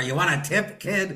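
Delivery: high-pitched voice talking around a chewed cigar. Retelling a golf club customer's offer, imitating someone chewing a cigar. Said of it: "he's chewing on a cigar".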